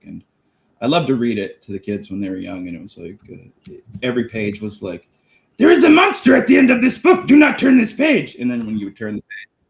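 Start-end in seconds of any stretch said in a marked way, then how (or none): 5.6-8.3 monster voice, very high-pitched and loud. Reading a Sesame Street book aloud to young kids, in Grover voice.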